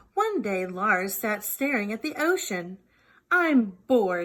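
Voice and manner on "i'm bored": loud, grumbling, growly polar bear voice. Reading a story, a bored little polar bear speaks, growling. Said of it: "he growled".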